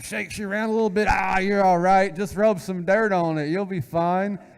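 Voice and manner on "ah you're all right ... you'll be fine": put-on dismissive voice. Imitating Dad brushing off a child's small hurt: imitating Dad, brushing off a hurt. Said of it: "Dad scoops you up and".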